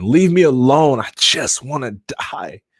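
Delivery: put-on crying, slow sobbing scream. Retelling a hospital admission: retelling crying and screaming. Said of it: "And I'm just crying and screaming".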